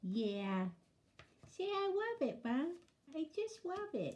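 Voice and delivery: soft voice for a pet. Woman voicing her pet's reply to her question: Barney voice. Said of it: "that's my Barney voice".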